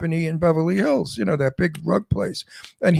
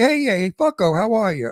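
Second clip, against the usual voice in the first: down-to-earth, blunt New York street way of talking; 4 semitones higher than usual. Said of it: "in New York, we say".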